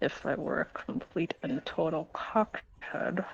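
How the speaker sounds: hushed mutter under the breath. Narrating a man's reaction after a trade is agreed; muttered under breath. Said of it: "he mutters under his breath".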